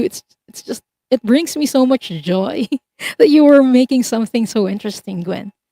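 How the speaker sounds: talking through laughter. Giving gwen a reading about a past lifetime, laughing while talking. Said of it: "Sorry for laughing".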